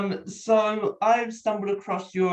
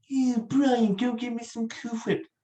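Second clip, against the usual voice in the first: put-on cartoon character voice; 3 semitones higher, 4 dB quieter than usual. Prompting another speaker with a line: Stewie voice.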